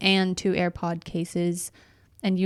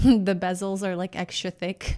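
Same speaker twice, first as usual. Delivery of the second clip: slow delivery with words broken up by laughter. Joking with a co-host about a picture, laughing while talking. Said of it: "I apologize for my laugh".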